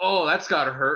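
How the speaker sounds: acted-out offhand, weird, sarcastic action-hero delivery. Retelling how a character shrugged off pain: imitating a weird sarcastic quip. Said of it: "in a weird, sarcastic, like".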